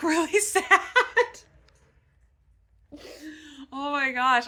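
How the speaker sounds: high, loud talking through laughter. Admitting feeling really sad after a sad chapter: laughing while talking. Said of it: "I'm laughing because I'm laughing at myself".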